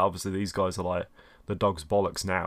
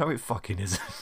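put-on, sheer, utterly disgusted tone. Recounting their own reply to a man who called it a hernia: retelling with mock disgust. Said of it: "the absolute disgust in my voice".

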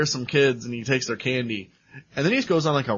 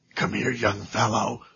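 put-on creepy voice, lower pitch; 4 semitones lower than usual. Retelling a scene where a voice calls a boy in the woods: imitating a creepy voice. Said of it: "we hear this creepy voice saying".

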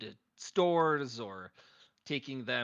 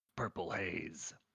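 spooky, unsettling, creepy put-on voice; 6 semitones lower, 7 dB quieter than usual. Saying the beer's name the way it must be said: creepy Purple Haze voice. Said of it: "my creepy Purple Haze voice".

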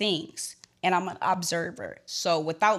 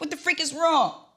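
high, loud, frantic voice. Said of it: "use your imagination".

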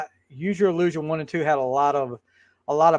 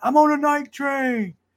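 very high, long, drawn-out yell; 11 semitones higher than usual. Retelling a friend who had been drinking: imitating a friend yelling. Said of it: "he yells out in the middle of the night".

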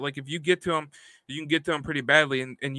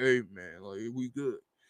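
deep, soft-spoken, low-key bass voice; 5 semitones lower, 8 dB quieter than usual. Talking about a man he is scared of, imitating DK Metcalf's deep voice. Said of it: "he has the deepest damn voice".

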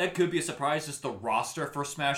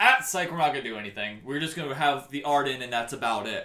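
plain

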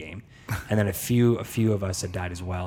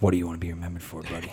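put-on wise old mentor voice, lower and quieter; 4 semitones lower, 5 dB quieter than usual. Acting out an old movie mentor scene with a young kid: Morgan Freeman impression. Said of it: "Is that your Morgan Freeman impression?".

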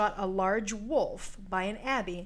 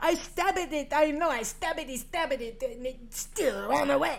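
bad put-on French accent, higher, slower; 5 semitones higher than usual. Narrator retelling a woman's fight with the beast, speaking as her: bad French accent. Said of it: "Sorry for the bad French accent".

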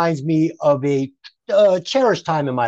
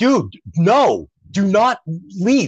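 mock very slow, drawn-out mild yell; 3 semitones higher than usual. Speaker retells a man screaming at him during an earthquake, imitating a man screaming. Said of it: "he's screaming. He's like".

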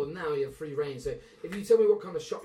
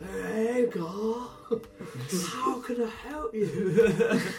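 put-on spaced-out stoner drawl, very slow and pitched up; 6 semitones higher than usual. Playing a shopkeeper who drifts in to greet God: stoned Swellius Digglesnatch voice. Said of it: "He just sort of drifts in like a stoned ghost".

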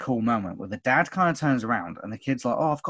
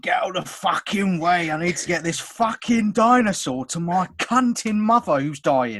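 fake London Cockney accent, pitched up; 5 semitones higher than usual. Joking with a co-host, the speaker acts out a scene: Cockney accent. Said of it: "you turn cockney wherever".

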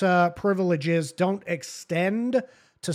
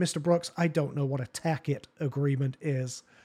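very sarcastic, heavily mocking tone; 5 semitones lower, 6 dB quieter than usual. Retelling what the judge said to the defendant: imitating a sarcastic judge. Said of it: "very sarcastically".

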